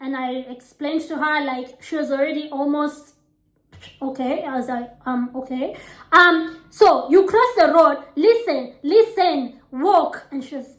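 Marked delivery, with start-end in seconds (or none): 6.7-10.3 put-on West African accented speech. Retelling guiding her sister across a road, in a West African accent. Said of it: "again, West African accent".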